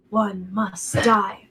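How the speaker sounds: distant, eerie, faint half-whisper, barely audible. Describing a voice a player hears far away: distant eerie half-whisper. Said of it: "Almost like a whisper".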